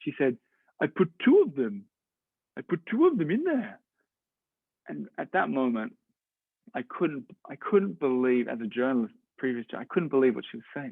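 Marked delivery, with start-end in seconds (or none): 0.8-3.8 put-on sing-song French accent on every word. Journalist retelling a woman's answer to his question, in a french accent. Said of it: "I'll stop doing the French accent".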